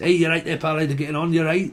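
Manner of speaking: easy northern English Leeds accent. Imitating how people greet you if you go to Leeds: Leeds accent. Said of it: "If you go to Leeds".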